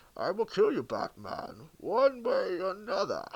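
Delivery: slowed monster voice, swinging pitch. Imitating Bane's voice after praising it: Bane voice. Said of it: "I really enjoyed his voice".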